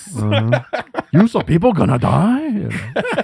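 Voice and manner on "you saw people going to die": silly, high-pitched put-on comic character voice. Quoting a movie scene after talk of a Jar Jar Binks impression: Jar Jar Binks voice. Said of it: "do a Jar Jar Binks impression".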